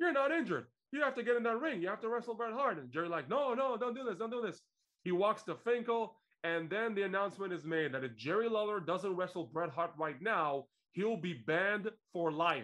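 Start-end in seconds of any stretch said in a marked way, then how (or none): 0.0-2.8 mock rapid-fire official's tirade, fast and pitched-up yelling. Recounting a wrestling storyline where a man confronts a wrestler: retelling a yell. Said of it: "starts yelling at him".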